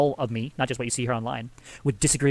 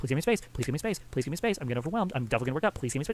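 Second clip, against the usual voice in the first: mock-frustrated, irritated, quieter and faster; 8 dB quieter than usual. Recounting a fight with his wife, he retells his own angry pleas for space. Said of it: "I was getting pissed because".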